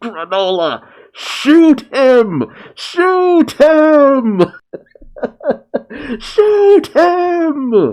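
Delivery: desperate high climbing shout, "him" stretched out. Reading a battle scene with Vegeta on the ground, Goku calls to Granola: Goku desperately shouting. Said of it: "Goku just desperately shouts".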